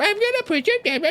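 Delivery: very high, mocking, mimicking voice. Voicing a skull that mimics the player's line back: mocking mimicry of a player. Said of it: "And he starts mimicking you".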